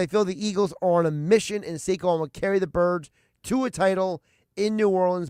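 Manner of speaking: ordinary talk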